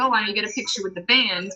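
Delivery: ordinary delivery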